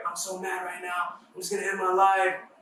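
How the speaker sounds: mock frantic outburst. Retelling what a younger sister said when she came up: imitating someone frantic. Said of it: "she came up to me in a frantic".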